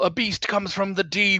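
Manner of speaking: high yell at the top of the lungs. A player voices their character's warning during a tabletop game turn, yelling at the top of lungs. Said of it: "at the top of my lungs I yell".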